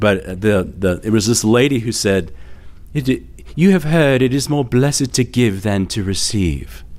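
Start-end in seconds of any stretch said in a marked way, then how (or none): 2.9-6.8 put-on polished British accent in a lady's voice. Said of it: "and in a British accent".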